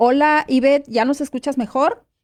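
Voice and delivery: loud, high-pitched calling out.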